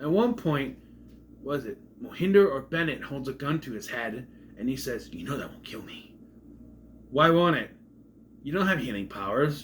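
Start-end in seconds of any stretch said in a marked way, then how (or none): 5.1-6.1 barely-there hushed, breathy whisper. Retelling a scene where a gun is held to his head: Sylar voice. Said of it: "I did a Sylar voice".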